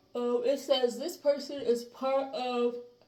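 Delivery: very loud, high-pitched speech through a yawn. Reading a description aloud, the speaker talks while yawning. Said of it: "I'm yawning as I'm talking".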